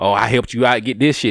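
ordinary talk, nothing marked

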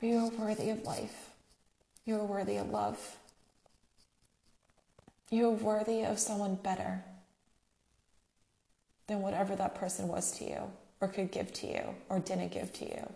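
tearful voice, crying while talking. Telling someone hurt by a past partner that they are worthy: crying while talking. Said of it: "I don't even care that I'm crying".

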